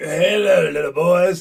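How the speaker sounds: put-on high, loud old-man voice. Imitating a referee greeting the players: imitating an old man's voice. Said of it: "he's like an old guy".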